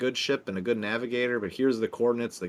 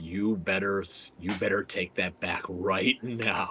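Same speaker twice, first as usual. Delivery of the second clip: whispering, lower pitch; 4 semitones lower than usual. Sending a secret Force Whisper to another character: Force Whisper to Jin. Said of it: "I whisper to Jin, to Force Whisper".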